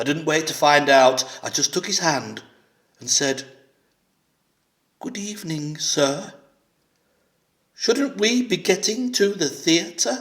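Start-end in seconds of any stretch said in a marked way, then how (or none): 5.0-10.2 gentle, raised-pitch nanny voice. Retelling taking a man's hand and addressing him, in a best nanny voice. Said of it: "In my best nanny voice".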